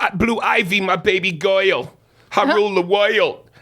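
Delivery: goyle and woiled, high and slow. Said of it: "when he would do [name] is like he would go".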